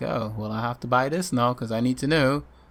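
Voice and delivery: ordinary delivery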